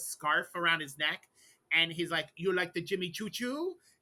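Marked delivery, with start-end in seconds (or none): 2.4-3.7 put-on heavy Latin American accent, laid on thick. Imitating a man who sprays Jimmy Choo cologne, thick South American accent. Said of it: "he's got a very thick accent".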